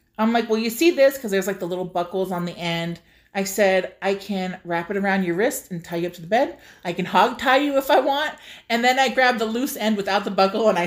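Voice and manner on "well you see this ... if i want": ordinary talk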